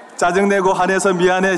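very loud full voice. Leading the listeners in an apology line to a neighbour: loud voice. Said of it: "큰 목소리 하세요".

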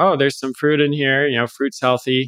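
ordinary talk, nothing marked

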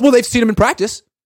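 high, loud, fast, shrill defensive delivery. Asked to repeat what was said, the speaker quotes Adam Schefter: mock-defensive Schefter impression. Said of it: "Schefter just gets real defensive".

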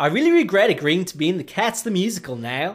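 put-on Australian accent. Reading a letter as if from Rebel Wilson, Rebel Wilson, Australian accent. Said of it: "attempt to add to my list of failed accents. An Australian accent".

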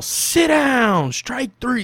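very high, very loud, yelled umpire-style call. Retelling a scared young batter's strikeout at a baseball game: retelling a loud yell. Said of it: "I just yell".

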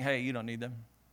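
imitated whisper. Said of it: "He's whispering".

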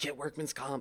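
low, quiet whispering. Retelling helping Demetra up and speaking to her, whispering. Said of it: "I'm like whispering to her".

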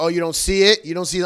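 put-on, loud, sarcastic jab. Retelling mom's reply in a story about a chore, mimicking mom's sarcasm. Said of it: "What would your mom be sarcastic about?".

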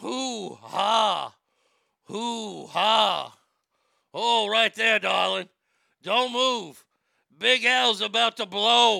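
slow, drawn-out, heated, full of passion. Imagining Al Pacino in the throes of passion: Al Pacino impression. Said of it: "I cannot imagine the throes of passion with Al".

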